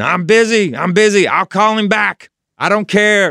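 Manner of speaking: high scream with drawn-out, stretched words. Retelling how a manager screamed at people calling for him: imitating someone screaming. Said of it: "And he's screaming".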